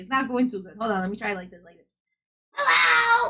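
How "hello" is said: put-on scary animatronic voice, higher pitch. Trying another way to imitate the character Foxy: terrifying Foxy voice. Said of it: "That's terrifying".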